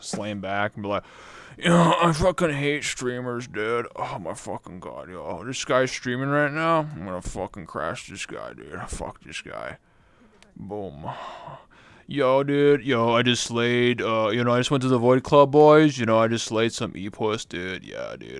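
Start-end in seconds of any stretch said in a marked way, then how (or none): 1.6-18.4 put-on edgy emo boy voice. Streamer imagines playing the emo wolf boy in full body; emo wolf boy impression. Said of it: "I was doing that impression of the emo wolf boy".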